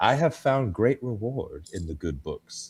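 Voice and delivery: play-acted eerie, creepiest possible delivery. Retelling a quiet film scene where a character answers about the Bible: imitating a creepy delivery. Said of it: "almost in the creepiest way".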